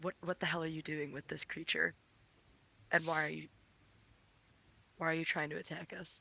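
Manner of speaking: quiet, soft, hushed half-whisper. Player character walks up to a woman, half-whispering to her. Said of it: "slowly walk up to her and whisper".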